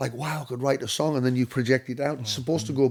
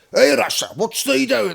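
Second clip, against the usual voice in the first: put-on local Whitehaven dialect; 9 semitones higher, 7 dB louder than usual.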